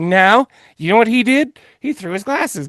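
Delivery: put-on old-witch voice. Man quotes his wife's reaction, in a witchy voice. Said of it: "the voice you do for your wife is the same voice you do for random witches".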